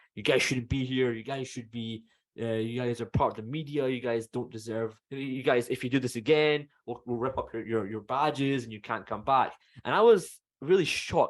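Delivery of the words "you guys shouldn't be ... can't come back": mock-severe, stern, ordering tone. Retelling what a security guard said to the group: imitating a very loud security guard. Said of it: "very loud".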